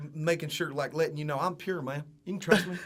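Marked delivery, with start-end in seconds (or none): 1.4-2.8 mock, imitated Southern drawl. Mocking how folksy speakers reassure you: imitating a Southern accent. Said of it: "the Southern accent".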